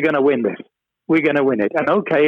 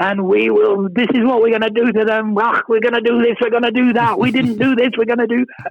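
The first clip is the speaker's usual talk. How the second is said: very Scottish, rapid, screaming rant; 7 semitones higher than usual. Recalling coming out of the showers to hear Frank screaming, imitating Frank's Scottish screaming. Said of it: "this very Scottish screaming voice".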